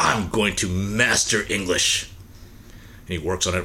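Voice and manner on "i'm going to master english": put-on angry man voice, much slower. Telling a story about a man who can't be understood ordering food, retelling a pissed-off vow. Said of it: "he gets all pissed off".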